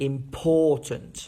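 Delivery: slow, with -POR- in important drilled strong. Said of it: "The first sentence that you can see is".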